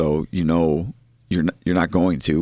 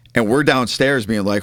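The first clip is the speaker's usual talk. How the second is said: usual speaking voice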